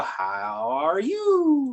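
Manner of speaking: voice rising at the end, drawn-out you. Speaker explaining how american english asks questions, rising question intonation. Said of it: "We automatically go up in the intonation when we ask a question".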